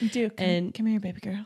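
soft, seductive coaxing. Imagining coaxing a bat out of a closet, sultry Steve Irwin voice. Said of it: "caress it with my sultry voice".

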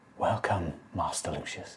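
barely-there, hushed, very quiet whisper. Game master voicing a hunched being from the shadows greeting Master Lucius, whispering. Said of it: "this time in a whisper".

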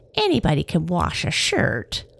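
scornful, dismissive, sneering tone with swooping pitch. The narrator reads Long Nose's answer to the test; sneering. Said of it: "she sneered".

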